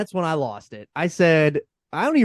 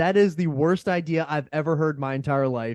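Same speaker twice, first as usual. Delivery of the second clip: ordinary talk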